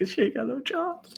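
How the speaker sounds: hushed whisper. Joking on a live stream about April having no job, whispering. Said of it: "I have to whisper that".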